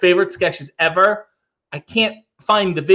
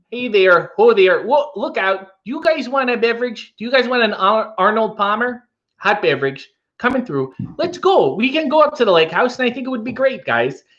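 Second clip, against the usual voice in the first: put-on Upper Midwest Minnesota accent; 4 semitones higher than usual. Asked whether he can do one, the speaker shows off a Minnesota accent. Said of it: "can you do a Minnesota accent?".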